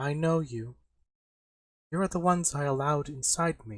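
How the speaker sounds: loud, booming voice coming from every direction. Speaking to Lena and the others after Lug silences Rusty: loud voice from everywhere. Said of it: "a loud voice that comes from just about everywhere".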